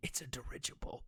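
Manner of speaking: secretive, hushed, breathy stage whisper. Acting out a guy who looks over his shoulder, whispered. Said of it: "he whispers like".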